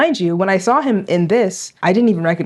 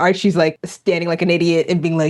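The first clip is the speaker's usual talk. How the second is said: usual speaking voice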